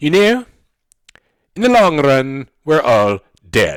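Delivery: very slow, attempted put-on British accent. Speaker describing what economists can say; attempted British accent. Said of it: "you have to do this in a British accent".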